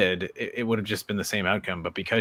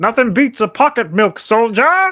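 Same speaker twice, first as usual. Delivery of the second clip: very loud, high-pitched, slow yell; 11 dB louder than usual. Quoting a film scene about pocket milk: Viggo Mortensen impression. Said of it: "That's my Viggo Mortensen impression".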